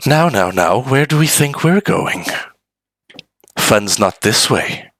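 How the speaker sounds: close, hushed whisper right in the ear. Game master voices an unseen figure after a player is stabbed, whispering in your ear. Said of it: "a voice whispering in your ear".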